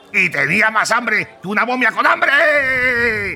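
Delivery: shouting at full volume, very high pitch. Character who lives in the pyramid explains waking up hungry, shouting. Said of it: "perdón por gritar otra vez".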